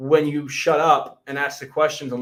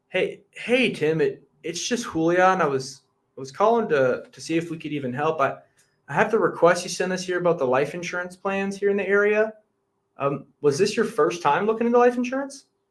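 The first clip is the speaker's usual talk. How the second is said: inquisitive, curious, inquiring manner; 3 semitones higher than usual. Demonstrating a life insurance sales call to a prospect, in a curious tone. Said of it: "I'll give a quick demonstration of what I mean by curious tone".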